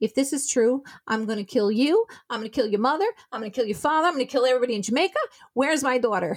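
crazed, frantic raving, rattled off fast. Retelling own reaction on the phone to the husband: retelling going crazy, frantic. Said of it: "I guess I went crazy".

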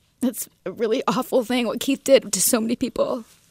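tearful voice, weeping while speaking. Reflecting on someone close facing jail, crying. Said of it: "I don't know why I'm crying".

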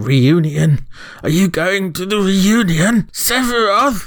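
very high, slow, weird, shaky, quavering put-on voice. Acting out hooded people walking around asking about the reunion, weird shaky put-on voice. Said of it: "now you've done it in that voice".

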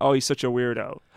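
plain

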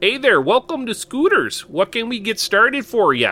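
put-on Minnesotan accent. Recalling working the Scooters drive-through, the speaker greets a customer in a put-on Minnesotan accent. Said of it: "I'd try to put on a Minnesotan accent".

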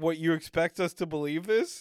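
normal talking voice

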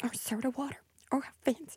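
quiet rat voices. Showing again the bit of two rats sharing a meal: softly imitating two rats dining. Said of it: "It's a little bit like this".

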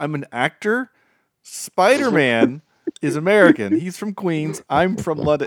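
slow, exasperated, deliberate, acted-out frustrated speech. Retelling an actor's answers to a prank interviewer: imitating frustrated Tom Holland. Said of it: "He was getting so frustrated".

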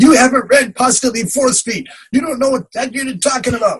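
very high yelling. Retelling yelling back at a podcast speaker: imitating yelling back. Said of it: "yelling back at the speaker saying".

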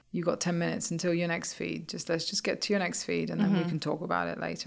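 ordinary delivery

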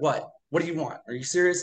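put-on hostile, rude tone. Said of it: "really kind of, like, hostile".

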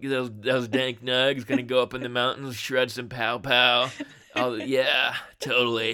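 laid-back stoner voice with a robotic quality. Asked whether residents must use that voice, reply in a stoner robot voice. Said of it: "I'm a stoner robot from Colorado".

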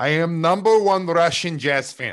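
put-on Russian accent. Answering why they are russian, in a fake russian accent. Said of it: "Why are you Russian?".

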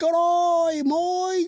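very high fake British accent, stretched "g'day". Talking about flying over to the UK, the speaker tries a bad British accent. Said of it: "let me try the British accent".

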